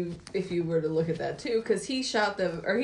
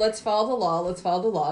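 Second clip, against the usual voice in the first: ordinary delivery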